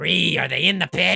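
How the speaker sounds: very loud, rasping, rough shout, pitched high. Voicing Uncle Pennywise calling down a corridor: Uncle Pennywise calling out. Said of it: "hear Uncle Pennywise from down another corridor goes".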